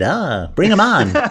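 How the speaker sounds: put-on old Hollywood talkie accent. Imitating an old Hollywood producer: 1930s talkie Brooklyn accent. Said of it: "it's Brooklyn, or it's like, uh, the, the talkies".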